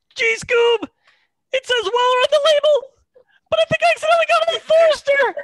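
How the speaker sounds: very high, loud, goofy slacker cartoon voice. Asked for a Scooby-Doo voice, the speaker performs a short bit, Shaggy voice. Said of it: "It's Scooby and Shag".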